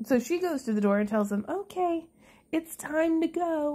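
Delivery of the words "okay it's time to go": put-on sing-song voice, higher. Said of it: "that little sing-song voice Michelle Duggar did".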